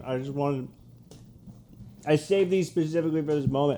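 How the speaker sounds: talking while chewing. On a podcast, eating a snack saved for the moment, talking while chewing. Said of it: "sorry we're chewing".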